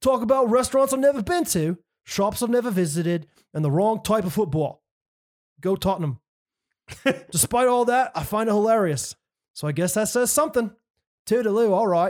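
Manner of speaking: put-on London English accent. Reading a listener comment aloud in the commenter's accent: london accent. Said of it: "so I'm gonna say it in his accent".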